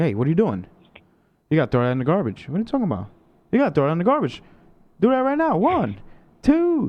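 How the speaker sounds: animated scolding, high and swooping. Retelling how a referee tells someone to pick up litter: imitating a referee scolding someone. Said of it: "He's like".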